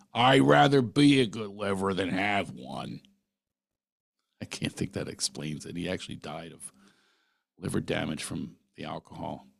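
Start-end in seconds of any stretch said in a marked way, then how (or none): 0.1-3.0 put-on broad Philadelphia accent, slow with swooping pitch. Recalling what his uncle would say to him, uncle's philly accent. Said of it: "with his Philly accent".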